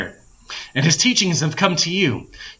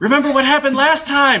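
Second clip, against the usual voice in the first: shrill, jeering, very high-pitched taunting shout; 9 semitones higher, 3 dB louder than usual. A familiar voice calls out to someone approaching a boulder, taunting yell. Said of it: "A familiar taunting voice yelled".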